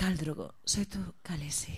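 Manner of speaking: put-on, mock seductive, sexy voice. Repeating the line after another speaker asks for it: put-on sexy voice. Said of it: "¿Podrías decir eso con voz sexy?".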